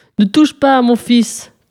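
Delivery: stern, thundering voice. A father at the door warns the witch off his son, thundering. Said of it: "tonna alors une grosse voix d'homme".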